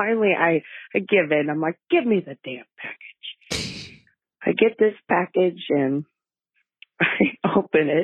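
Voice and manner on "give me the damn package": fast, aggravated, fed-up and irritated voice. Telling how her husband proposed at Christmas, the speaker is retelling an aggravated demand. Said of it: "And so I am aggravated".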